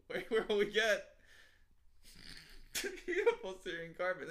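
speech broken by laughter. Scolding the other speaker for laughing, then laughing while talking. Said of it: "You got me doing it now".

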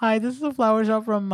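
sugary, sweet, high-pitched voice. Speaker imitates a flower-shop caller's phone greeting in a sweet girl's phone voice. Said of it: "this girl's like sweet ass voice".

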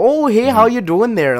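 very high, loud, put-on Canadian accent. Retelling a doctor's greeting at the clinic: imitating a Canadian accent. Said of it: "the most Canadian person I've ever met".

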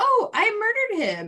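tiny little put-on voice, very high-pitched.

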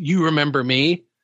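ordinary talk

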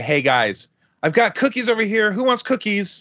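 very high, rising, loud yell. Explaining an analogy, acting out calling out in a loud party room, yelling over party noise. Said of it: "You're yelling".

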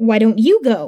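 plain

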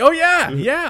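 very high, very loud squeal in odd cadence. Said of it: "Did they try to have him sound like Christopher Walken".

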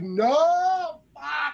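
long, high, drawn-out, put-on scream. Retelling jumping up off the couch at a scene: imitating own scream. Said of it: "I'm screaming".

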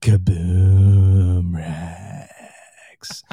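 loud, deliberately deepened, put-on announcer voice. Repeating a name he likes the sound of: deep voice. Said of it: "I'm going to make my voice deep and say it".

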